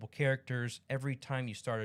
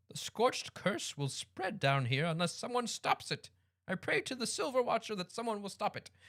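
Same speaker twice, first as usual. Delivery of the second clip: put-on high, elderly woman character voice; 9 semitones higher than usual. Voicing a character while narrating a story; old lady voice. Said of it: "I've been talking like an old lady".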